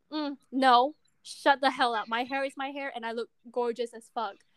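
normal talking voice

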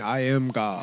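low quiet god voice. Discussing Morgan Freeman's roles, acting out his entrance in a Morgan Freeman God voice. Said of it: "You got the God voice".

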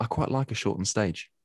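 said very quietly in a hushed voice. Making an honest admission to Tom, said very quietly. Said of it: "I'm gonna say this very quietly".

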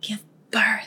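put-on whisper. Retelling a favorite line from the episode, imitating Ann Walker whispering. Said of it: "whispers it".

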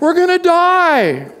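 very high-pitched screaming wail with die drawn out. Retelling what the disciples cried out on the boat while Jesus slept, retelling a scream. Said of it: "They start screaming".

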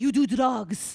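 put-on speaking with a Persian accent. Retelling her mom's reply to a confession, persian accent. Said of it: "Your Persian accent, by the way, is so on point".

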